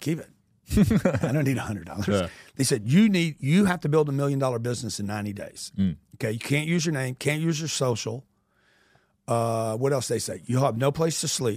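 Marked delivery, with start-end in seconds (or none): 0.0-2.1 mock-laughing, dismissive, slower. Retelling their reaction to being offered $100, retelling a laughing reply. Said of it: "I'm laughing like".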